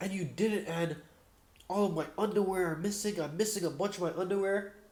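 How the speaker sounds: acted-out, high-pitched screaming. Retelling a man overheard yelling on a speakerphone call: imitating a man screaming. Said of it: "he's like screaming like".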